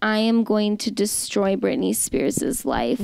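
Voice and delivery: ordinary talk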